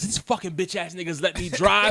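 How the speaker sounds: put-on furious swearing. Retelling waking up after a drunk night: retelling own angry cursing.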